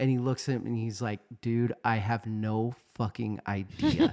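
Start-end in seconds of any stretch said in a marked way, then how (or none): 1.4-4.1 slow speech, chuckling and laughing through the words. Retelling how a schoolmate finally answered: imitating someone laughing while talking. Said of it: "he cracks up and he just starts laughing".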